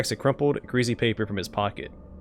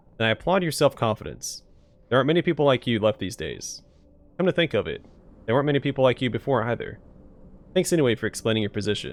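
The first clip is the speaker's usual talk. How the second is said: plain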